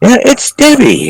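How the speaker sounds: exuberant, very high, happy female exclaiming voice. Imitating a clear female voice heard on a recording: imitating a happy female voice. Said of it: "That's a great impersonation of it".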